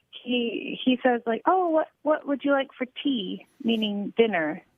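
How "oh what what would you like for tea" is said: put-on British accent. Retelling an American friend who still talks like a British person, British accent. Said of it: "he still talks like a British person".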